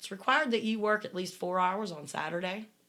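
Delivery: plain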